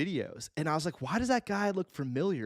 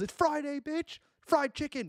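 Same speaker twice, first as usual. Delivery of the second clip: put-on hollered shout, pitched very high; 11 semitones higher than usual. Describing a caller who phones in every Friday, retelling his yell. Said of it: "He just calls in every Friday and he yells".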